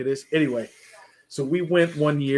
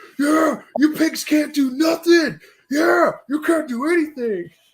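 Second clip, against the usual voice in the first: put-on very high, drunken, jeering and taunting voice; 14 semitones higher than usual. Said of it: "when he starts drinking".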